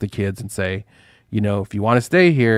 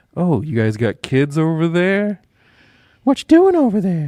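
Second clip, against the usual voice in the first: put-on creepy voice, swooping and pitched up; 8 semitones higher than usual. Mocking how the Jedi approach kids in the show: imitating creepy Jedi.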